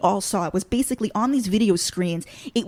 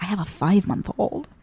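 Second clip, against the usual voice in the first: imitated whispering. Retelling how a new acquaintance shared a secret: imitating someone whispering. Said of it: "whispered to me that".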